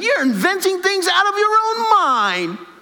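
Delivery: very high, daft, silly comedy-sketch squeak. Reading a quoted passage the way the speaker heard it, Monty Python voice. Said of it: "my Monty Python Python voice".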